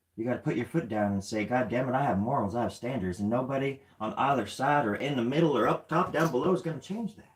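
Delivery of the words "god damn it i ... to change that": put-on, laid-on cowboy-style voice. Urging listeners to keep their morals and standards: put-on cowboy voice. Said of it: "Forgot to wear my cowboy hat when I act like, when I talk like that".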